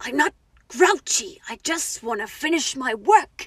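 very loud, booming, bad horror character voice. Quoting a line from The Shining: bad Shining character impression. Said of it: "this is not a good impression".

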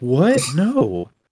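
shocked reaction in movie-actor style. Trying out a Mark Wahlberg impression: Mark Wahlberg impression. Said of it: "my Mark Wahlberg impression".

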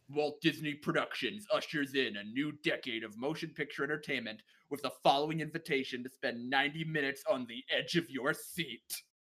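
stock trailer voiceover voice. Quoting an old Walt Disney movie trailer: gravelly movie trailer voice. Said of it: "a gravelly movie trailer voice".

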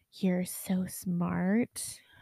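soft, hushed stage half-whisper. Retelling what someone half-whispered into her ear: imitating a half-whisper.

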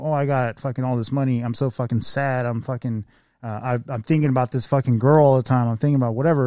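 plain

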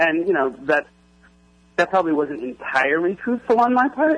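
voice cracking. Speaking about a woman who gave opinions on the show, voice cracking. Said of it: "You hear my voice cracking there?".

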